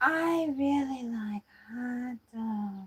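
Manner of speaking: very slow, every word drawn out. Saying a line as Jennifer Coolidge: Jennifer Coolidge impression. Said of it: "sounded like Jennifer Coolidge there".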